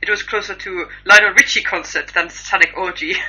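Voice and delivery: loud, put-on Russian accent. Quoting what a fan said, put-on Russian accent. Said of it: "That's my Russian voice".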